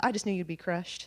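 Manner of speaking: put-on Southern accent. Retelling what their mother told them, imitating a southern accent. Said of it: "She's Southern, by the way".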